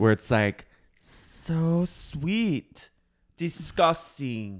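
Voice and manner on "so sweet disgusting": put-on sweet little baby voice, quieter. Imitating how a girl talks in a TikTok: Kylie cadence. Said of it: "that Kylie cadence".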